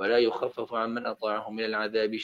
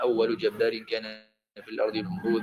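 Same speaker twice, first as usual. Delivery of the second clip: ordinary talk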